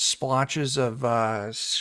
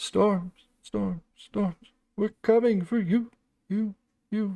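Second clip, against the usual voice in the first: repeated, pitched-up echoing shout; 9 semitones higher than usual. Asked what it sounds like when it echoes, the speaker performs: echoing voice. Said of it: "what does it sound like when it echoes?".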